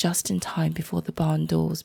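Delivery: ordinary delivery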